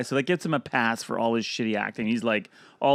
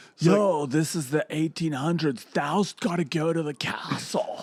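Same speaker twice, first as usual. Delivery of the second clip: put-on slow, drawn-out eighties teen-comedy dude voice; 4 semitones higher than usual. Imitating an actor playing a Dracula-film role: Keanu Reeves voice. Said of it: "pretty Bill and Ted era Keanu Reeves".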